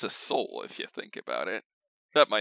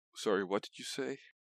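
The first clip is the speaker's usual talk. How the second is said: listless, deadpan, low and flat energy; 3 semitones lower, 7 dB quieter than usual. Acting low energy for the rest of the episode: low, flat energy. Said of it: "That was my impression of low energy".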